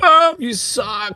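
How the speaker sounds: put-on very high-pitched screaming. Acting out everyone screaming at an athlete, as a mock-screaming heckle. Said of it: "screaming at some guy".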